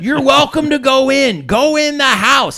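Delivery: put-on drunk man's high, drawn-out yell. Retelling how a drunk man on a porch yelled across the street: imitating a drunk man yelling. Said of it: "he's yelling at me".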